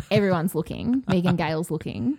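ordinary talk, nothing marked

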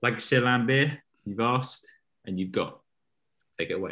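terrible fake Northern English accent. A host introducing the Raptors and handing over to the next speaker, terrible Northern accent attempt. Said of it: "a terrible attempt at a Northern accent".

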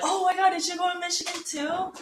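high, gushing voice. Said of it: "be like".

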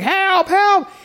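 acted, piercing, very high, shrill scream. Commenting on a film scene, the speaker imitates Terry screaming. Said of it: "he's just like screaming".

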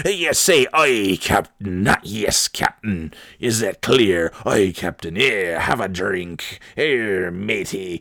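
put-on old sea-captain voice. Retelling a movie scene, the speaker voices the film's captain in a Simpsons sea captain voice. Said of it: "talks like the sea captain".

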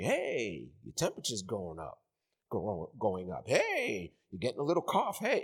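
tempting, hushed, half-whispered devil voice. Retelling fears during self-quarantine: imitating the devil half-whispering. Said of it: "the devil starts whispering".

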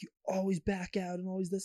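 high, pissed-off, irritated accusing tone, acted out. Retelling how another person got really pissed: imitating someone angrily complaining. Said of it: "really pissed".

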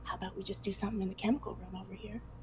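rushed, loud stage whisper in a giantess voice. Narrator voicing a giantess as the group leaves, in a loud giantess whisper. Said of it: "whisper in a giantess whisper so very loudly".

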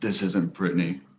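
put-on creepy, eerie voice. Answering how the voice in the nightmare sounded: imitating a creepy voice. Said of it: "What did the voice sound like?".

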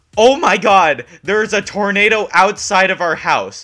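high, very loud screaming woman's voice. Telling a story, the speaker acts out their mom bursting in; retelling mom's scream. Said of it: "starts screaming".

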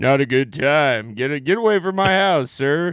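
imitated masculine voice. Imitating a fan's real voice after joking about him, real manly voice. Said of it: "So he's got a real manly voice".

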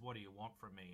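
ordinary talk, nothing marked

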